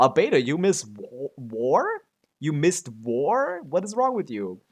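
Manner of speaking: put-on incredulous, disbelieving tone. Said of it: "I was like".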